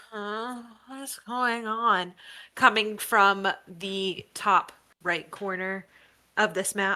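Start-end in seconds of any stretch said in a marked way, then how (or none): 0.1-2.1 quiet murmur, mumbled under the breath. Voicing a voice from a tree corner: murmuring. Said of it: "a kind of murmuring of".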